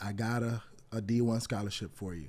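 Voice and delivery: ordinary delivery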